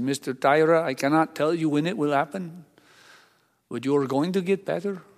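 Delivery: put-on Indian-accented speech. Retelling what a new doctor said at the diagnosis: Indian accent. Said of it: "in his wonderful Indian accent".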